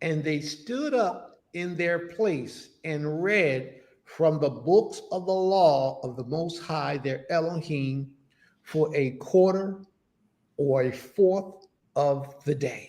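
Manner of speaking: very slow, low, deliberate word-by-word reading. A speaker rereads the passage for the listeners: reading real slow. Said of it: "We're going to read it real slow for y'all".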